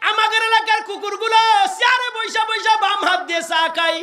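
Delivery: loud calling out. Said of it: "Fakhre বাঙ্গাল ডাক দিয়ে কয়".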